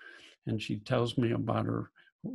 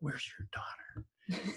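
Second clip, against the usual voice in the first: hushed, soft, breathy whisper; 5 semitones higher, 11 dB quieter than usual. Retelling a first Zoom call, asking the mother quietly: retelling own whisper. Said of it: "I sorta whisper".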